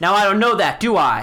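stern, hard-voiced woman calling out. Voicing a hard-faced woman calling down to the players from above: hard-faced woman calling down. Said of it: "stout woman with a hard face, calls down".

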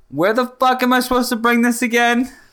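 quick, high-pitched delivery. Playing a character who yells a question across the house: yelling in character. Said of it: "I'm going to yell".

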